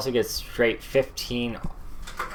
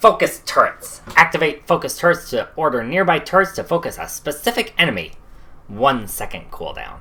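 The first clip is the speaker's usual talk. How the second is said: loud put-on goblin voice, bad-villain style; 4 semitones higher, 7 dB louder than usual. Reading a game's patch notes aloud; goblin voice. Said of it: "How's my goblin voice?".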